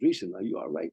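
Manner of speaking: ordinary talk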